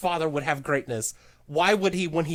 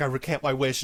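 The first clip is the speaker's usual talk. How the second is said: mock, acted crying character voice; 3 semitones lower than usual. Acting out a movie character taking back his wish: imitating a crying character.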